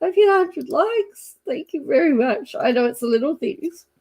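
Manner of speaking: talking through tears, tearful voice. Creator thanking viewers for reaching 100 likes, crying while talking. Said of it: "I am literally crying at the moment".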